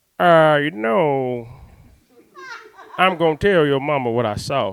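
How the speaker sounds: wild, slow, drawn-out crazy voice. Retelling Mister Bill's reply after being greeted, imitating Mister Bill's crazy voice. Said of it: "mister Bill had this crazy voice".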